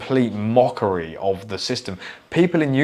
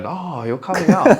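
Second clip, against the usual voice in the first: put-on old man voice with Chinese accent, raised; 8 semitones higher, 5 dB louder than usual. Mocking the other speaker's remark, imitating a chinese grandfather voice. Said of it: "Why did you sound like a Chinese grandfather then?".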